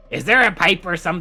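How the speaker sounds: high little gremlin creature voice. A player voices a line meant for another character; gremlin voice. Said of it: "I got so excited to use my gremlin voice".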